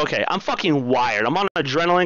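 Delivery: plain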